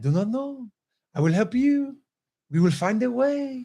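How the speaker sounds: laid-back, unbothered, relaxed, easygoing calm. Imitating French people helping travelers at the airport: imitating chill French people. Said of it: "they're so chill. They're like".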